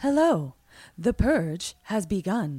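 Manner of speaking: eerie half-British announcer-style woman's voice. Describing the purge video on everyone's tv, creepy semi-british lady voice. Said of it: "like that creepy, like semi-British lady voice".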